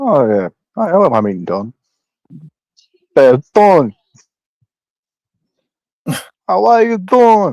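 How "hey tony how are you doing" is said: put-on movie boxer voice, higher pitch. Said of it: "I would meet him in Rocky voice".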